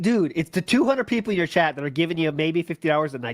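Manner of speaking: normal talking voice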